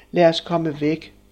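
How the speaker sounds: plain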